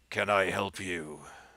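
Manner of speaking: rough gravelly voice. Narrating a priest at the pulpit addressing the newcomers, in a gravelly voice. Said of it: "asked in a gravelly voice".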